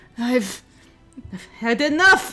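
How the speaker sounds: forced out through clenched, gritted teeth. Voicing Alabaster slamming a sword down on a hellhound: through gritted teeth. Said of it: "Alabaster grits her teeth".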